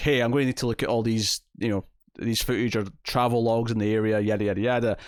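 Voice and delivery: ordinary talk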